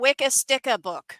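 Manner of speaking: accent from Maine. Showing how someone from Maine would say the phrase, Maine accent with dropped R's. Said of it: "if you were from Maine, you'd say this is a Wicca Sticka book because they don't say their R's".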